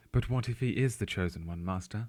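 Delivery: very camp, flamboyant, theatrical posh put-on accent. Joking in the voice of a disciple addressing his master: camp Obi-Wan voice. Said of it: "That's a very camp Obi-Wan".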